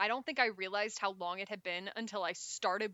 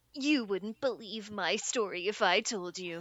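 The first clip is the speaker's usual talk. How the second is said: mock-angsty movie monologue delivery, much slower; 5 dB louder than usual. Discussing the Spider-Man films, the speaker quotes the opening monologue, angsty Tobey Maguire impression. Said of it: "he sounds real angsty".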